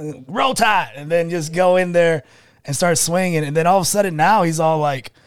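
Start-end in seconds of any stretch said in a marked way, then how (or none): 0.0-0.9 put-on crazy, cocky, swaggering country boy voice. Retelling a fighter's entrance gimmick: imitating Bryce Mitchell as crazy country boy. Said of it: "came into the U F C kinda like".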